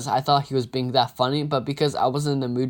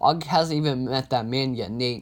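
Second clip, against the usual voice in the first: ordinary delivery, nothing marked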